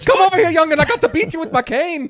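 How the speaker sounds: put-on very high, very loud Irish accent. Describing a commercial, imitating the man with the cane, super stereotypical irish accent. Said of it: "his super stereotypical Irish accent".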